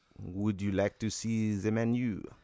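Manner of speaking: slow, bad, put-on French accent. Voicing an arrogant waiter who offers the menu: bad french accent. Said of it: "in a shitty French accent".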